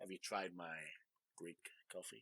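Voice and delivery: very soft, hushed, insinuating, suggestive voice. Showing how the innuendo works in a line: suggestive innuendo voice. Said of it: "let me say it in a different voice".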